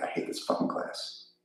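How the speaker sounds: soft, whispered, sulky grumble under the breath. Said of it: "under his breath".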